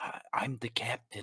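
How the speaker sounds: quiet whispered aside. Leaning in and telling one character a secret: hushed aside behind a hand. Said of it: "puts a hand over his mouth".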